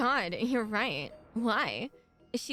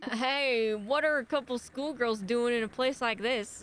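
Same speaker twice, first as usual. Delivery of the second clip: put-on American South accent, acted character voice. Voicing a character calling out to two schoolgirls, in a southern accent. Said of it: "my southern accent's coming out".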